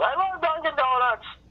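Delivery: sudden outburst, very high and shrill. Retelling a drunk audience member's interruption during a set: imitating a woman yelling. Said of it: "she yells".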